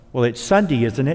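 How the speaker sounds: ordinary talk, nothing marked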